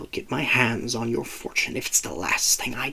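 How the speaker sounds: very soft, hushed, hissed whisper. A figure leans in to whisper into Violet's ear, hissing. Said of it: "the voice hissed".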